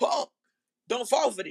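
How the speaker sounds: held-back insistent yelling. Retelling what he kept yelling at the TV: retelling own yelling. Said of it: "I'm still yelling".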